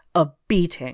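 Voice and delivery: stern, severe. Narrator reads the lord answering a captor who asks for a reward, stern. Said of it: "replied Sarastro sternly".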